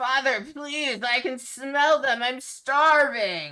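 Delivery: very loud, high-pitched inhuman howl. Game master voices a starving creature beneath the floor calling to the father: inhumane scream. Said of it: "inhumane scream".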